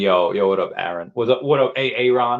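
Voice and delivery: ordinary talk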